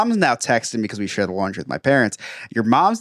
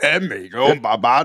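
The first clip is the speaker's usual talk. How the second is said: put-on alien creature voice. Showing how they usually talk, doing a Jabba the Hutt voice. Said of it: "I usually talk like Jabba the Hutt".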